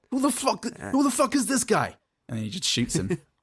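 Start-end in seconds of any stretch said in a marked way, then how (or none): 0.1-1.9 bad put-on voice, high, swooping, drawn out. Acting out a movie scene where a character gets shot: Robert De Niro impression. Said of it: "Wasn't Robert De Niro, though".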